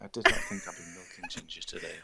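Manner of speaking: mournful, sorrowful, somber delivery. Recalling a quote Hugo said earlier, imitating Hugo's somber tone. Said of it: "He was like so somber".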